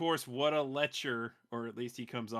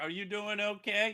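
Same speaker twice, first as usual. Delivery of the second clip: mock breezy, unbothered, nonchalant, pitched-up casual voice; 8 semitones higher than usual. Imitating a character floating with arms crossed: imitating a nonchalant character. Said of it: "Dude's all nonchalant".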